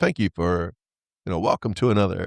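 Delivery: put-on deep radio announcer delivery. Podcast host doing his usual episode opening: radio announcer voice. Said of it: "It's my radio voice".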